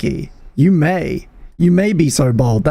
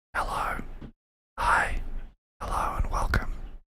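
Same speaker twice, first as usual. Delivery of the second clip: toned-down, softer, much quieter delivery. Radio host greeting listeners after saying they'll bring it down, toned-down, softer delivery. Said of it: "We're going to bring it down here a little bit".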